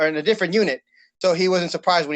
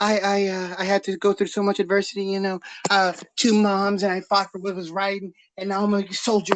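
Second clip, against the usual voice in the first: mock-earnest, parodied commercial testimonial voice; 4 semitones higher than usual. Complaining about a new army commercial, the speaker parodies it, mocking an army recruitment ad. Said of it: "that new army commercial about like".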